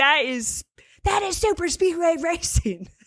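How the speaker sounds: angry, heated, high-pitched, insistent. Tell how he keeps saying it about the racing, imitating an angry tone. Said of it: "he says it with more of like an angry tone".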